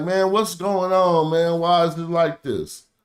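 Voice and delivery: beseeching, pleading, begging voice. Retelling what an ancient king said when facing a rival kingdom, imitating someone pleading. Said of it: "but he like pleading like".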